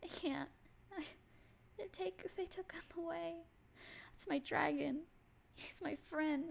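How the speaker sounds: very high-pitched, hushed, soft tearful weeping. Voicing a grieving character whose dragon was taken: quiet crying. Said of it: "quietly crying and just been going".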